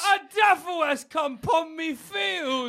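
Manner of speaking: high, rustic medieval peasant voice. A medieval serf reacts to a stranger claiming to come from the future, medieval serf voice. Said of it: "I'll be a medieval serf".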